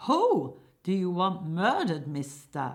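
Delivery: shouting. In a radio-style scene, a hired killer addresses Jim, hired killer shouting. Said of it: "hired killer shouting".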